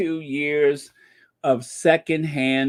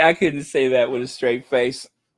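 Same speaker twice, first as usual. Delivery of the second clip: usual speaking voice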